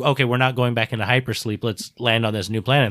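ordinary delivery

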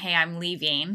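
plain

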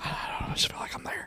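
hushed, breathy, barely audible whisper. Retelling what the other person said while he was whispering: imitating someone whispering. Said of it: "he starts whispering".

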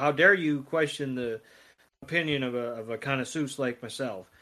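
ordinary talk

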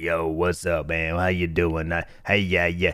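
deep radio voice, dropped low in pitch. Telling about a buddy who streams, imitating Struggle Bus TV's deep voice. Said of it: "he just has this deep voice and he's just like".

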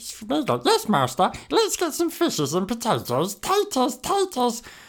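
cheerful, friendly, kindly and eerie creature voice. On a podcast, show an impression you used to do, a friendly Sméagol impression. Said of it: "Schmeagol's the friendly one".

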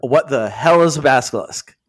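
ordinary talk

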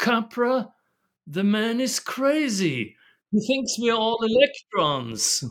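put-on high British accent, "crazy" stretched. Retelling what Bateson said when a friend asked his opinion, in Bateson's British accent. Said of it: "with his British accent".

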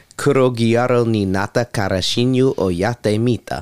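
slow Japanese spoken with an Italian accent. Speaker saying an anime's Japanese title aloud, Japanese with Italian-sounding accent. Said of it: "Why in Japanese did you use an Italian accent?".

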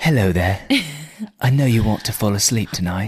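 bad, soothing sleep-story voice. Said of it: "He's like".

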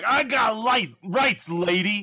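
smug entitled drawl. Quoting the entitled murderer type from films: entitled murderer voice. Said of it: "the entitled murderer who's like".

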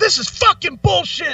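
acted angry screaming. Recalling ranting when a mic echo set them off, retelling own angry yelling. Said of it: "yelling and screaming like".

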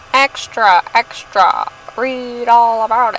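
clumsy, very slow, drawn-out bad New York accent. Podcast co-host riffing on the word extra, in a bad new york accent. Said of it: "You like that accent? I don't know how to do a New York accent".

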